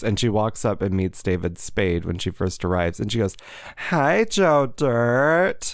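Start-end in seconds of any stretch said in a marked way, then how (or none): 3.8-5.8 high, annoying voice, one word drawn out. Retelling what a reality show contestant said, imitating Demi's annoying voice. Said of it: "she has the most annoying voice".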